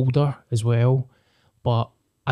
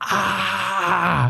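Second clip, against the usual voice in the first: mock primal all-out scream, high and drawn-out; 7 semitones higher than usual. Retelling screaming in cold water: retelling a flat-out scream. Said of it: "I was just screaming, like, flat out".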